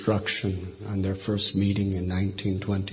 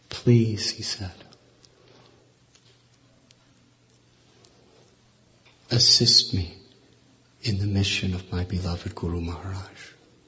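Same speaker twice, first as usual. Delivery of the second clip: put-on choked-up, pleading voice. Retelling an old man's plea to all of his followers: retelling a choked plea. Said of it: "with a choked voice".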